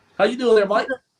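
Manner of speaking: put-on Australian accent. Greeting Mike during a slang quiz, in a best Aussie impersonation: put-on Australian accent. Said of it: "your best Aussie impersonation".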